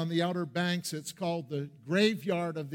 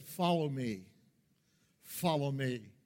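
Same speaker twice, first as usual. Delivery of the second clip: mock calm, even, unhurried, steady voice; 3 semitones lower, 4 dB quieter than usual. Speaker recalls a captain's words amid terror, retelling his calm voice. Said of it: "In this calm voice".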